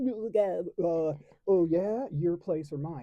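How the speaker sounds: mock, very slow, drawn-out, loud smart-aleck tone. Retelling answering a cashier's offer to check him out: retelling a smart-aleck reply. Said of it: "smart aleck".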